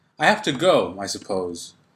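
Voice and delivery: pitch drops away on suppose. Demonstrating the tone at the end of each sentence: falling tone on suppose. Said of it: "listen to my tone at the end of each sentence... my tone is falling, not rising".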